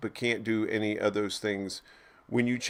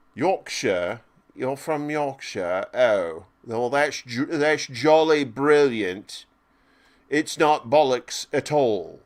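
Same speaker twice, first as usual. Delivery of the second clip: put-on English accent, loud and slow; 3 semitones higher, 5 dB louder than usual. Pretending to chat with someone from yorkshire: put-on english accent. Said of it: "I like to speak English accents sometimes".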